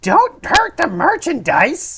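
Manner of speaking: put-on high, slow old woman voice. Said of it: "in a old womany voice".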